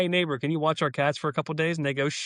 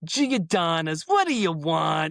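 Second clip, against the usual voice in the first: slow, drawn-out put-on New York accent. Imagining the other speaker's introduction, in a put-on new york accent. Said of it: "In like a New York accent".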